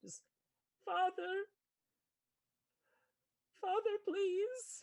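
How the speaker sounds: very high, loud, screamed begging. As the church doors close behind the players, one last voice gives a screaming plea. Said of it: "you hear one last sort of screaming plea".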